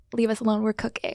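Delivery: muttered under the breath. Retelling what a girl said at a party: imitating someone muttering under her breath. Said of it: "the one under her breath was like".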